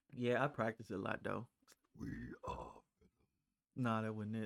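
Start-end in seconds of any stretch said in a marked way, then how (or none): 2.0-2.8 very low, growling put-on monster voice. Speaker retries a voice after being told they sound like Venom, deep Venom growl. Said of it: "I ain't get low enough".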